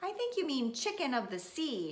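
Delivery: light, affectionate teasing. A mother corrects her child's phrase, teasing. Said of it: "she teased".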